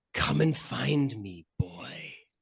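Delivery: horrible, cold, menacing hissed voice. A voice from the depths of nightmares calls to the boy: cold, hissing, menacing voice. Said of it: "the same cold, hissing, horrible, menacing voice".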